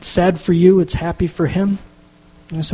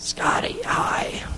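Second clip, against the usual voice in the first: put-on faint, weak, breathy old man croak. Retelling a phone call where a grandfather croaked out a greeting, imitating a croak. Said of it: "he croaked it out".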